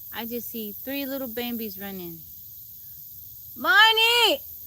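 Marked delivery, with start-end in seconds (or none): 3.6-4.4 very high, very loud yell. On a live stream, calling someone back from where the deer are, yelling. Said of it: "Sorry, guys, I'm yelling".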